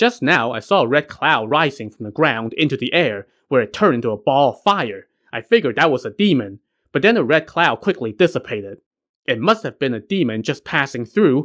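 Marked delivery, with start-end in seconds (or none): none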